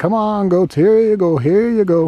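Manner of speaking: loud, high call. Explaining how the speaker calls goats trained to their voice: loud goat-calling voice. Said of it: "with a loud specific voice".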